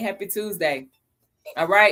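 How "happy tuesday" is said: ordinary talk, nothing marked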